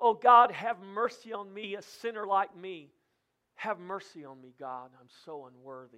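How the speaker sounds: mock anguished, slow, pleading cry. Preaching the parable, the speaker acts out the tax collector crying out to God. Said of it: "the tax collector's crying out".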